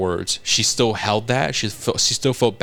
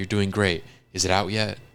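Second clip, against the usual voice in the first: put-on fading speech, quieter; 2 semitones lower, 4 dB quieter than usual. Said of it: "losing blood, dazing off".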